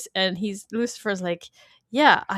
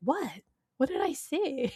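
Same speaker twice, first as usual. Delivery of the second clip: put-on bewildered, clueless tone, pitched up; 5 semitones higher, 8 dB quieter than usual. Retelling a scene from the show, imitating Lucifer sounding confused. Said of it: "so confused. He's like".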